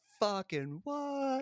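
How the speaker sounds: very high-pitched, soft, small, stunned and shocked. Retelling a scene where toys surround Sid; imitating Sid, shocked. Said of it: "And Sid's like".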